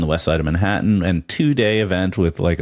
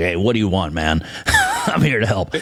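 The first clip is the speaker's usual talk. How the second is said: animated, hyper-masculine put-on tough-guy voice. Pitching an assistant voice for a startup, the speaker demonstrates: hyper-masculine macho voice. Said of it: "a hyper masculine macho voice".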